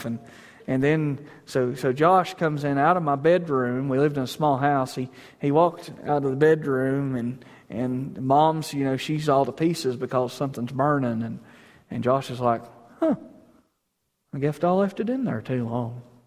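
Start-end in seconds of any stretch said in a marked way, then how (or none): 13.0-16.0 mock-calm put-on impression, no urgency. Retelling Josh's reply as Mom panics about something burning, imitating Josh's unbothered tone. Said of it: "No urgency, no alarm, just actually kind of talks like this".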